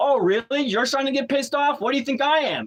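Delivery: heated, high-pitched, mouthy talk-back. Retelling arguing with a cop while a truck driver leaves: retelling talking back to a cop. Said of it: "I was really talking to the cop just like that".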